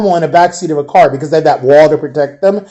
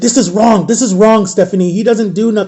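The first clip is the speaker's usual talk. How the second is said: outraged, furious, angry delivery; 4 semitones higher than usual. Retelling a friend protesting an arrest to an officer: imitating someone furious. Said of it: "she was so pissed".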